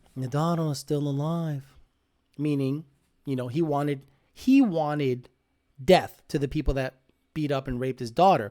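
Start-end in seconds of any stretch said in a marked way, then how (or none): 0.2-1.6 mock very dry, understated, deadpan delivery. Repeating a favourite movie line: very dry Godfather delivery. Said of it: "his very dry".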